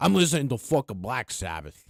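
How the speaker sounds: excited low put-on voice. Showing how the impression gets excited: excited Joey Diaz impression. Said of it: "But then you gotta get really fucking excited".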